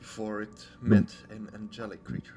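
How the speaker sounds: soft, quiet whisper. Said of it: "I quietly whisper".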